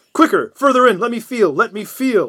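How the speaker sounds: high, loud, frantic, urgent pleading.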